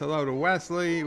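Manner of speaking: usual speaking voice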